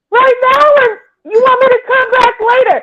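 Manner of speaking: put-on woman yelling. Retelling how a woman outside the back door was yelling: imitating a woman yelling. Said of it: "And she's yelling".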